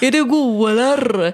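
put-on child voice with Gothenburg accent. Imitating a child who mumbles in Gothenburg dialect: imitating a child's Gothenburg accent. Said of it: "han försöker ju prata göteborgska".

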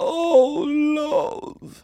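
put-on very high, frightened Yorkshire old woman voice. Trying out accents with others, the speaker does a scared old northern woman voice. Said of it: "That's like an old, like, northern woman that she's really scared".

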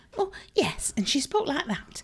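put-on Manchester accent. Describing Mary, the shopkeeper's best friend, Mary Manchester accent impression. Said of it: "I'm just showing off my acting skills".

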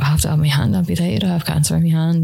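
bawling, crying out between sobs. Retelling answering the woman wheeling your trolley; retelling bawling. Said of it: "And I was just like, bawling".

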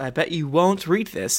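plain

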